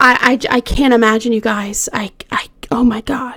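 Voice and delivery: choked up, halting stammer, voice breaking. Recounting a brutal case to listeners, getting choked up. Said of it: "I'm already getting choked up".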